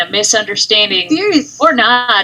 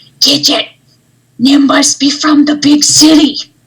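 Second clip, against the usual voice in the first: sidelong, pitched-up, raised stage whisper, leaning in; 5 semitones higher, 5 dB louder than usual. Crouching beside Gidget to speak aside about Nim: side half-whisper as Joe. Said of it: "crouching real low to Gidget and whisper".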